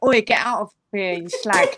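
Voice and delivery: put-on Essex accent, street-style delivery. Comparing how a phrase sounds, the speaker shows how it would be in Essex, mock Essex accent. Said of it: "Essex, it'd just be like".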